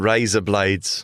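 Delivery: put-on Australian accent. Friends swap accent attempts, one trying out a phrase in a new accent for the other to judge. Australian accent. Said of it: "razor blades in an Australian accent".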